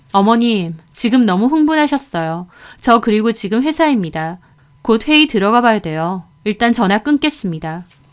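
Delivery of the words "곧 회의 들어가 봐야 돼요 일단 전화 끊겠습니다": ordinary delivery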